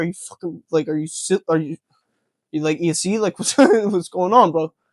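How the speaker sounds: put-on, worked-up, fed-up rant, tripping over words. Retelling how the other debater reacted: imitating someone getting pissed off. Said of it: "he was getting pissed off".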